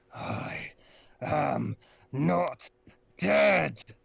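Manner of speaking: loud, rough, vibrating, rumbling voice. Narrating, speaker voices a floating fist that appears before you, deep vibrating rumble. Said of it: "a deep vibrating rumble".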